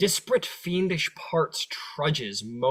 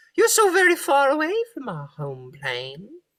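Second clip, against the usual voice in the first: put-on very high, loud old-hag voice; 10 semitones higher, 5 dB louder than usual. Voicing the hag greeting the group to her fort: Mad Maggie voice. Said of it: "this woman sort of refers to you all and says".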